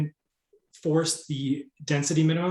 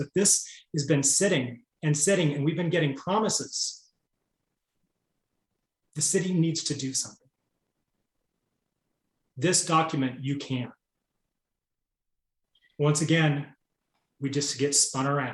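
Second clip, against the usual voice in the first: impassioned, emotional delivery. Commenting on years of unkept city promises: emotional. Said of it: "I'm sorry for being so emotional about this".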